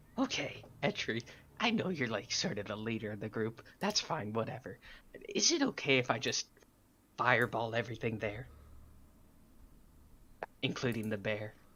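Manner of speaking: hushed half-whisper, spoken as an aside. Speaking in character into the group leader's ear, asking permission: half-whispering in character. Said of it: "whisper in his ear".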